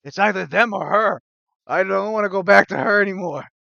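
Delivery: high-pitched orc creature voice. Narrating a scene, voicing an orc in front of the group: orc voice. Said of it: "and another orc goes".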